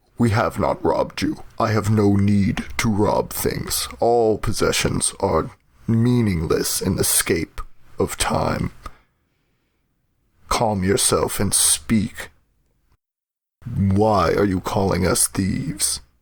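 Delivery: low, menacing, intimidating in-character voice. Voicing a character intimidating a woman who accused them: intimidating in character. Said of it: "he's gonna attempt to intimidate".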